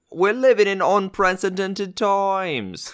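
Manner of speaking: put-on old-timey English accent, high and slow. Playing a reporter in a bit, the speaker tries an english accent. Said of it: "I was gonna go for an English accent".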